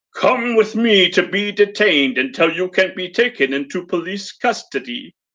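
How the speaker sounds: voiced as giant robot, robotic machine voice. Narrating a story, read the robot's command to the alligator person in a booming robot voice. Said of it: "A booming voice spoke from somewhere deep inside the machine".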